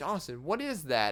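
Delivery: ordinary talk, nothing marked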